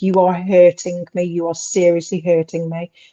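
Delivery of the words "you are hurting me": plain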